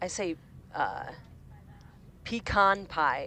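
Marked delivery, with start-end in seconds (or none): 2.2-3.3 pecan with weight on second syllable, con. Showing how the speaker says pecan pie: stress on con in pecan. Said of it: "with the emphasis on con".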